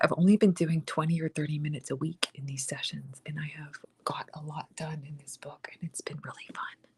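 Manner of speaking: soft, secretive, confiding whisper. Describing short weekly sessions working in a book, whispering. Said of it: "I don't know why I'm whispering".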